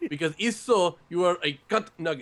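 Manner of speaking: put-on Mexican accent. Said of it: "mimic, like, a Mexican accent".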